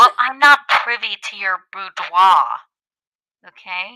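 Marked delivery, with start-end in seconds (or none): 0.0-2.4 loud, teasing, poking-fun tone. Repeating mom's words back to her: mocking imitation of mom. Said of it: "see how you make fun of me?".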